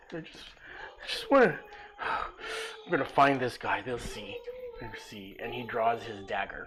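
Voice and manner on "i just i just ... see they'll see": blubbering, sobbing speech through tears. Voicing a character who stops near a tree, bawling: crying character. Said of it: "he's just bawling his eye out".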